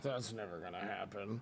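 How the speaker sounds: very low, hushed, quiet, offhand nonchalant mutter. Retelling what was said under the breath to the crowd: imitating a nonchalant mutter. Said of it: "nonchalantly under his breath".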